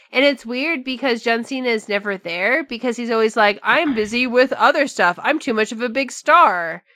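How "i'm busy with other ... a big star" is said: plain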